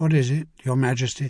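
plain reading voice

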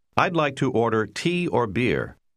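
plain

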